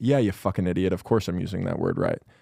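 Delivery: put-on sneering, condescending, scornful tone. Recalling their reply when asked about a word, in a mock-condescending tone. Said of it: "And I had the tone of".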